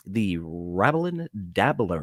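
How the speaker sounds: low radio announcer voice, on-air host delivery. Saying the show's tongue-twister name again after stumbling on it: radio voice. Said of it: "I've gotta do that in a radio voice every time".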